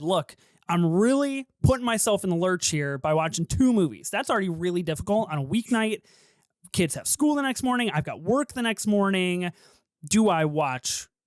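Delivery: ordinary talk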